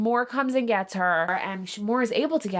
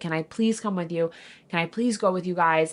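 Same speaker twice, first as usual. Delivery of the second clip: put-on panicked, begging tone, lower pitch; 4 semitones lower than usual. Retelling a character's meltdown as she begs to come along: imitating a panicked plea. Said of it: "She's having a panic attack".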